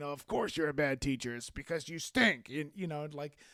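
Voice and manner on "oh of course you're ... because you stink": mock sour, grumpy old-timer voice, sarcastic. Imitating the grumpy sarcastic Muppet Show guys heckling a teacher: grumpy sarcastic Muppet Show hecklers. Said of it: "sarcastic guys from the Muppet Show".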